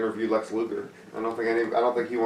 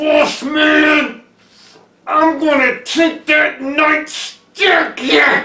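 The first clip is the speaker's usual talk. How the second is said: put-on menacing wrestler voice, higher and louder; 13 dB louder than usual. Doing the requested impression of Nails threatening with a nightstick: Nails impression. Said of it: "your Nails impression".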